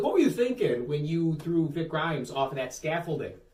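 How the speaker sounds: ordinary talk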